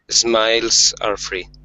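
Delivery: ordinary delivery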